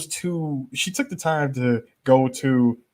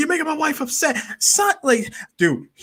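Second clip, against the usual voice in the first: pitched-up yelling in protest; 13 semitones higher than usual. Retelling what the husband said to Sally: imitating someone yelling. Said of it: "he's yelling at the".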